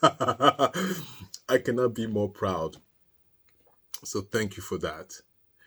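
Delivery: speaking while holding back a laugh. Thanking viewers for their comments, holding back a laugh. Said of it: "I'm trying not to laugh".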